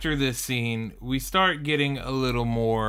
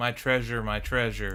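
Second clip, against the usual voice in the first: ordinary talk, nothing marked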